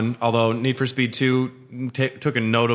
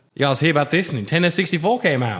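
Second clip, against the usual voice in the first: bad fake Australian accent, higher pitch; 4 semitones higher than usual. Joking about the Nintendo 64's late Australian release: bad Australian accent. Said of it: "two nights in a row of bad Australian accents".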